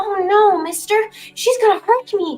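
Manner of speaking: put-on child character voice. Voicing a child who backs away from an attacker: child character voice. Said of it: "see you attacking a child".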